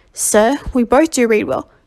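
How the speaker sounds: ordinary delivery, nothing marked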